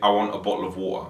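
Multicultural London English accent, London. Comparing London accents, saying the sample sentence in a Multicultural London English accent. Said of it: "And in MLE".

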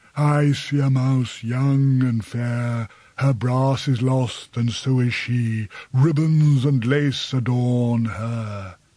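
honeyed, taunting, mysterious, smooth, mocking, mellifluous tone. A bat answers a visitor who states his purpose, in a mocking, mellifluous tone. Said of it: "in a mocking, mellifluous tone".

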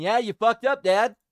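high, loud, cute little dog voice. Reacting to a clip, voicing what the dog thinks: voicing a cute little dog. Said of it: "a cute-ass little dog going".

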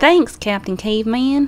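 put-on Southern accent. Saying the line again after being told to just do Southern, Southern accent. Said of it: "Just do Southern".

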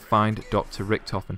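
ordinary talk

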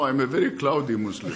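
normal talking voice

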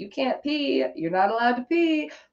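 put-on taunting tone. Giving an example of teasing Piss Baby in a rubber diaper, retelling a mocking taunt.

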